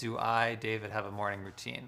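ordinary talk

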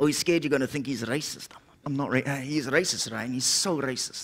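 low, soft, hushed muttered delivery.

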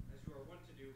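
ordinary delivery

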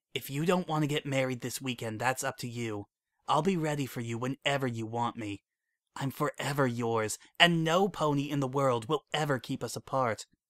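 whispering hypnotically, mesmerizing whisper. Reading a story aloud, she speaks into Bonbon's ear: hypnotic whisper. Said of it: "still whispering in a hypnotic voice".

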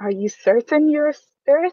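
high, trembling, shaking voice that cracks and breaks. Voicing a character in a narrated scene, addressing the listener; shaking, breaking voice. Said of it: "his voice is shaking and it kind of breaks down".

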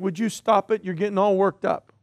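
ordinary delivery

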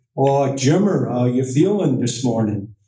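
put-on deep, strong Wisconsin accent. Recalling their Guys on Ice routines, imitating Heimo's Wisconsin accent. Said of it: "he would do his Canadian, you know, Wisconsin accent".

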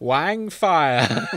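hammed-up, over-the-top crazy uncle character voice. Describing a fic scene with a straw-beard disguise, doing the Wang Fire voice. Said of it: "uses the voice".

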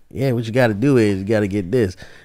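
mock elderly man voice.

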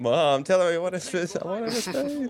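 put-on high, whiny, pleading child voice.

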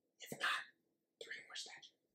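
very soft, hushed whisper, half under the breath. Channel host asking viewers to subscribe for more statue giveaways, whispering. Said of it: "I don't know why I'm whispering".

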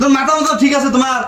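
angry, loud yelling.

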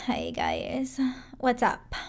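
put-on Valley girl accent. Demonstrating an accent the speaker can do: Valley girl accent. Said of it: "I can do a Valley accent".

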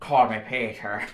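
slipping into a put-on Irish accent. Showing how an actor's accent gradually turns more Irish, imitating an Irish accent. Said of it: "gradually turns more Irish".

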